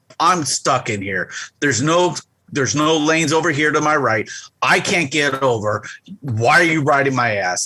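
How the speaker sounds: livid heated rant. Driving alone on the freeway with a car tailgating, retelling an angry yell. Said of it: "And I'm just yelling".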